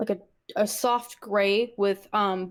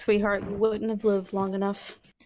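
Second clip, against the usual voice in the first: sad, plainly stated, matter-of-fact delivery. Speaking to someone who could have bitten their friends: sad matter-of-fact tone. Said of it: "like a sad matter of fact tone".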